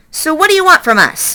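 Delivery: high, growling fox voice. Narrator reads the fox Fink's question to the robot: growling as Fink the fox. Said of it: "growled Fink".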